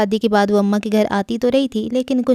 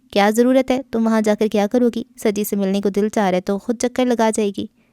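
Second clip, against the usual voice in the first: usual speaking voice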